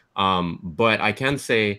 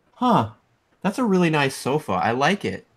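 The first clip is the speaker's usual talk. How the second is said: pitched-up, high android host voice; 6 semitones higher than usual. Describing the game's title screen, imitating the android host. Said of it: "she'll just be all like".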